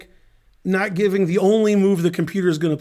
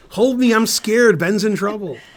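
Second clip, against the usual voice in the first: mock frightened, scared, clingy voice; 3 dB louder than usual. Joking about the other commentator during commentary, imitating someone scared. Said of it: "She'll be like".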